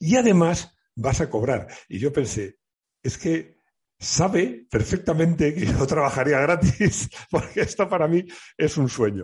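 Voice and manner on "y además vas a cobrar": put-on southern Spanish Andalusian accent with lilt. Recalling the man who offered a dream job, speaker quotes him in an Andalusian accent. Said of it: "le dejo un acento andaluz".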